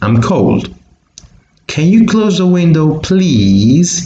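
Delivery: rising-falling tune on window, please, especially please. In a pronunciation lesson, the speaker demonstrates question intonation: rising then falling intonation. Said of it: "there's a rising intonation and a decreasing intonation".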